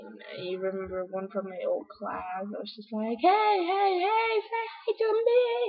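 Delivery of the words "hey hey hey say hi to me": very high, drawn-out, demanding yell. Retelling going around to people who didn't say hi: imitating own past yelling. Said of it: "yelling at them if they don't say hi".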